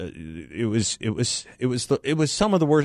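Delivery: stuttering, stammering speech. Describing a parade of floats on radio, stuttering. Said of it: "as you can hear, I'm stuttering".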